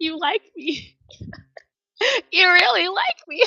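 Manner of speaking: mock teary, very high-pitched. Imitating an award winner's thank-you: tearful Sally Field voice. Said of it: "you know how Sally Field cried?".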